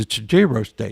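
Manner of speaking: plain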